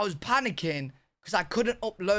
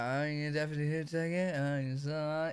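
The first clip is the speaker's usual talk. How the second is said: mock drunk slurring, quieter; 3 semitones lower, 5 dB quieter than usual. Reacting to a video of a witness, imitating her slurred drunk speech. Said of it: "she's slurring".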